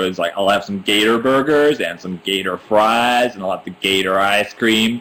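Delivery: put-on American dad accent. Retelling what an American dad guy was overheard saying, imitating an American dad. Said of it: "I heard this like American dad guy go".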